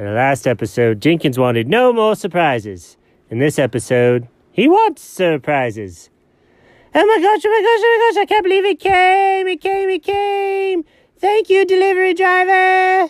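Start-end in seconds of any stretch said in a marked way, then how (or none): 6.9-13.1 very high, loud yell with came stretched out. In a Jenkins and Alfred episode, a character calls to a delivery driver: yelling. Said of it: "Why are you yelling at random people".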